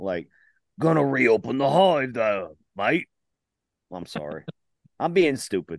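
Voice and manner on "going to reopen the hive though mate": attempted put-on London Cockney accent. Repeating an earlier line, attempted Cockney accent. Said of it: "I'm trying to do my best Cockney".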